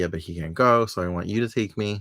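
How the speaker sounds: plain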